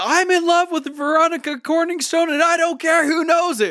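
high loud yell.

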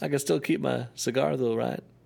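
scratchy, raspy politician voice. Joking about Hillary taking Bill's nuts as collateral: Bill Clinton voice. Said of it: "my new Bill Clinton impression".

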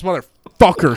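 'motherfucker' stressed hard. Retelling a man firing up the show crowd, hitting 'motherfucker' hard. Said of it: "he hits the word motherfucker so hard".

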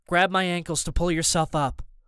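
ordinary delivery, nothing marked

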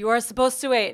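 put-on French accent. Retelling what a man said during sex, imitating his french accent. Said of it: "in his French accent".

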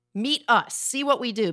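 ordinary talk

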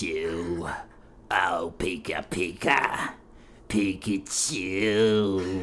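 put-on low, wheezing, old smoker voice. Mocking another speaker's Pikachu audition, asthmatic 90-year-old Pikachu voice. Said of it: "so it sounds like a 90-year-old asthmatic".

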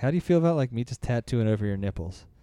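ordinary talk

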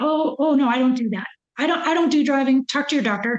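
ordinary talk

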